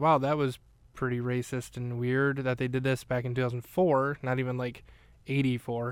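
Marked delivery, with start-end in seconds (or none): none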